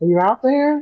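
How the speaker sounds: calling out loudly. Following a female voice off the trail, a player's character calls out; calling out. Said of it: "I'm trying to call out her name".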